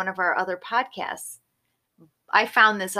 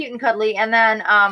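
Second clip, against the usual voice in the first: usual speaking voice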